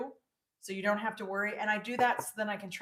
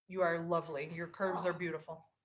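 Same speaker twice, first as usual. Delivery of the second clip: heavily exaggerated, dripping sarcasm; 4 semitones lower, 3 dB quieter than usual. Answering the other speaker's question: dripping sarcasm. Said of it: "Your sarcasm is dripping".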